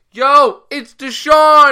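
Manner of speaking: very high, loud, slow yell. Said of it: "he's straight up yelling".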